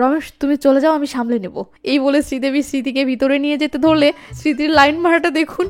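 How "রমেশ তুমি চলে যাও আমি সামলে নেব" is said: ordinary talk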